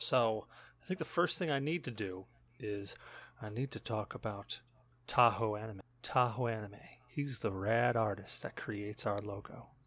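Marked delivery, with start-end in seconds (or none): 6.0-9.6 mock seductive sensual voice, lower and quieter. Thanking the artist who makes the logo: put-on sensual voice. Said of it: "the best I can do for a sensual voice".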